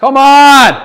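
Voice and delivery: frustrated yell, very high, very loud, held long. Reacting as a ball rolls toward the edge of the green: loud shout. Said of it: "Sorry if that was loud".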